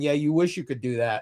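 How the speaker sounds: ordinary talk, nothing marked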